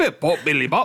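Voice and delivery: light, put-on touch of Australian accent. Joking about beer brought back from England: put-on Australian accent. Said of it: "Went a bit Australian there".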